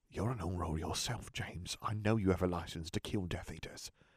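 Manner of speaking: pressing, urgent, barely voiced, very hushed whisper. Peter steps closer to James and speaks to him; urgent whisper. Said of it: "whispered urgently".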